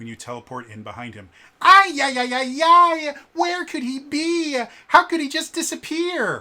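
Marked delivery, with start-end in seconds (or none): 1.6-6.4 very high, loud, frantic, drawn-out wailing squeal. Reading the Power Rangers introduction box text aloud: Alpha 5 voice. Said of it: "just because I really love doing this voice".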